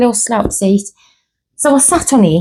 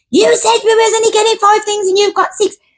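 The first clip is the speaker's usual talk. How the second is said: mock tantrum, very high child's voice; 11 semitones higher than usual. Retelling what Ryan said when things went wrong, imitating Ryan's tantrum. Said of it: "Ryan would have a tantrum".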